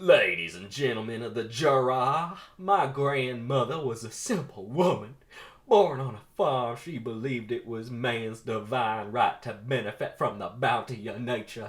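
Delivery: heavy exaggerated southern drawl, jury drawn out. Voicing a character mocking the judge before the jury, heavy exaggerated southern drawl. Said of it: "speaks in a very heavy and exaggerated southern drawl".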